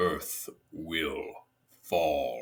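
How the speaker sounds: very low, deep, hushed voice. Recounting a game's ending, quoting the alien overlords: deep sotto voce Scrin overlord. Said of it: "in this deep Soto voice".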